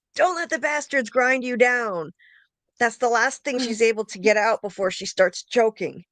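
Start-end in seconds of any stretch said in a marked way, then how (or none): 0.2-2.1 defiant, acted-out scream. Describing a hanging scene from a show, retelling a character's scream. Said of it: "she screams with the close up".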